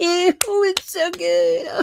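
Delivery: very high, slow, smug mock voice. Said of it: "He's like".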